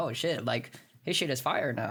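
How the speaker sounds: ordinary talk, nothing marked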